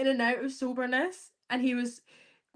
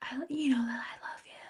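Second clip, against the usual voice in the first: mock whisper, quieter; 6 dB quieter than usual. Imitating a man from a show who always whispers: imitating someone whispering. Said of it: "He always whispers".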